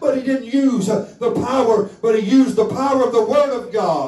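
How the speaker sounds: very high, fervent preaching climax.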